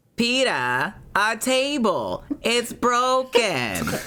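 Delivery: very high-pitched cartoon housewife voice. Taking a turn at the group's Lois Griffin challenge: Lois Griffin impression. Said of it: "I want to hear you guys' best Lois Griffin".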